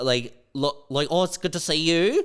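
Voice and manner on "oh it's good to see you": put-on broad, thick, grating Australian accent, pitched up. Recalling someone's grating voice, in a broad Kath and Kim Australian accent. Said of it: "Like straight up Kath and Kim voice".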